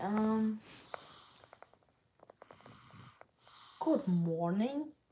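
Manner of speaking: put-on Russian accent in English. Asked by another speaker to say good morning: Russian accent. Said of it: "speaking of Russian accent, say good morning".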